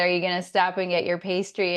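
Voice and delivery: ordinary talk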